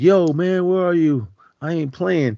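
high-pitched, loud screaming. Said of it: "he's just screaming like".

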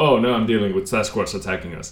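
ordinary talk

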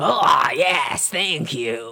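put-on very slow, drawn-out grouchy monster puppet voice. Retelling what a grouchily voiced woman says in a show: grouchy voice. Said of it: "this really grouchily voiced woman".

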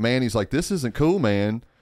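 ordinary delivery

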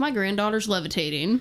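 plain

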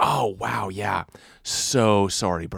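mock overly enthusiastic, too eager tone. Retelling an apology to a biker: imitating own overly enthusiastic apology. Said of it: "Like that".

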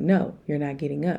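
normal talking voice

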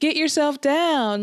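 acted mocking jeer. Retelling how we taunted him, acting out our mocking voice. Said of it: "our mocking voice being like".

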